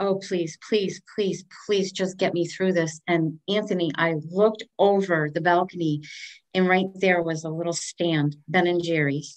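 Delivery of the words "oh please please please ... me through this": put-on desperate, pleading voice. Speaker telling Anthony about a Wednesday night, retelling a desperate plea. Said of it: "and I'm like".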